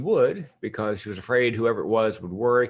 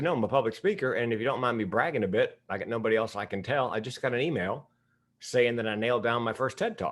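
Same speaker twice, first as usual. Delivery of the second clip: ordinary talk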